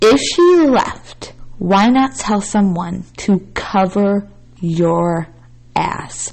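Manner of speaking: slow, deliberate, measured delivery, every word weighted. Repeating a point so it sinks in, slow and deliberate. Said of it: "let me say this slowly because I want this to sink in".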